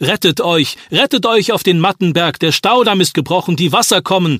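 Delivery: loud, high calling out.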